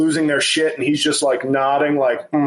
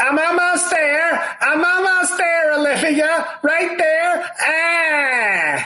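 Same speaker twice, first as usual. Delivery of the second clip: very high, slow whine, "ah" stretched out; 13 semitones higher than usual. Doing an impression of John Mulaney with a whiny carnival-barker voice. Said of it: "That's my impression of".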